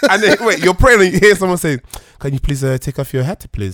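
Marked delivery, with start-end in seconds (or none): 2.2-3.8 put-on French accent, louder. Retelling being asked to take off a hat while praying: imitating a French accent. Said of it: "Oh, the French accent".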